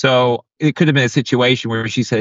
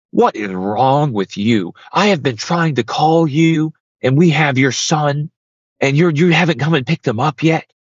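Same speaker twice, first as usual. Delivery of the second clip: acted-out heated, angry, berating scolding rant; 3 semitones higher than usual. Recounting how a man came in yelling at her before guests, retelling him yelling. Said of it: "he starts yelling at me".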